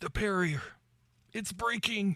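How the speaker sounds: very high-pitched, spoken through clenched teeth. Game narrator voicing Perimena to the party, speaking through gritted teeth. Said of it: "through gritted teeth".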